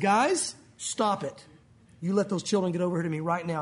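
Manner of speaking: put-on firm, no-nonsense voice. Imagining how he really said the quoted words, acting out an imagined firm voice. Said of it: "I bet he said it in a firm voice".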